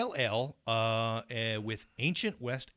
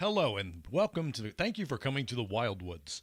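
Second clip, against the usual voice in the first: put-on announcer voice. Imagining the listener walking down the boardwalk greeting people, in an announcer voice. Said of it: "You're just going".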